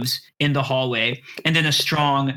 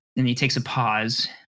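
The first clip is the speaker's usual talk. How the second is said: usual speaking voice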